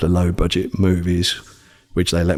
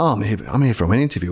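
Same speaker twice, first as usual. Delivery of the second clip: mock cheery, all-jovial, fast delivery; 3 semitones higher than usual. Recalling arriving for an interview, retelling a jovial greeting. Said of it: "all jovial and whatnot".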